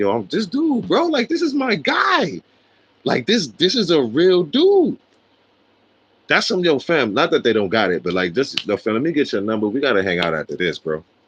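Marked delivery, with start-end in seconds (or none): 0.0-5.0 teary, high, swooping, weepy gushing, crying. Retelling a boxer taking the belt, imitating Canelo crying. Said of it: "He's down there crying like".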